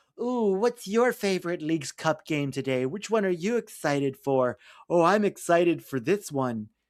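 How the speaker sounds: mocking, sarcastic sellout cheerleading voice. Mocking hosts who got bought out by a network: mocking imitation of paid shills. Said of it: "and they're like".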